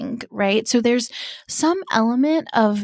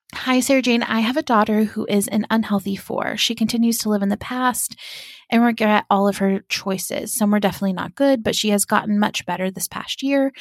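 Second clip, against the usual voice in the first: usual speaking voice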